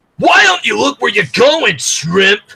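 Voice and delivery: scary tough-guy voice. Showing how Vinny talks compared with Hank, in a scary Vinny voice. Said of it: "that almost scared me".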